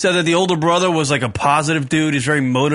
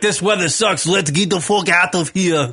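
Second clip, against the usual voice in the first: put-on female Russian accent; 3 semitones higher than usual. Imitating russian women wanting to leave home: put-on russian accent. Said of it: "I slowly morphed into the, uh, the accent there".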